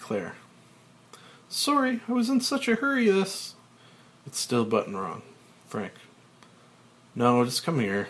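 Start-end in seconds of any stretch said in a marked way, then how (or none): 1.5-3.5 abashed, embarrassed, very high-pitched voice. Claire, fumbling to rebutton her coat, answers Frank: embarrassed.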